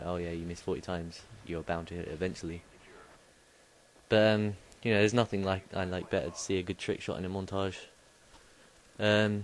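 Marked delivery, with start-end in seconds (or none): none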